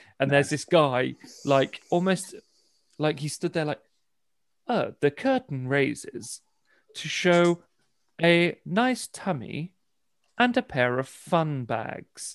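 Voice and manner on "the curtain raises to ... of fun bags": slow, posh narrating voice. Recounting an audio description of a show, speaker imitates its narrator in a posh narrator voice. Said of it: "fun bags does not go along with that posh tone".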